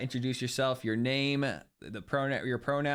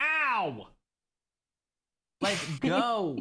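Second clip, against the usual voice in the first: hurt, pained, pitched-up yelping cry; 8 semitones higher than usual. Mid-conversation, the speaker is suddenly attacked by a cat; in pain from cat attack. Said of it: "I'm being attacked by a cat right now".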